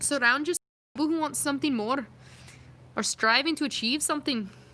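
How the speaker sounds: put-on Scottish accent. Trying out accents, unsure if Irish or Scottish, put-on Scottish accent. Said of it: "Is it a Scottish accent? If we talk like this".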